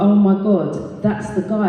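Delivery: plain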